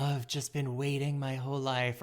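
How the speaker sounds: put-on dreamy tone. Showing how a romantic question is usually answered: put-on dreamy reply. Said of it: "a dreamy, like".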